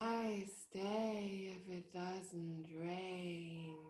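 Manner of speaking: very breathy, airy voice with lots of air. A speaker leading a group through a practice sentence, very breathy. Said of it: "Put in as much free air as you comfortably can".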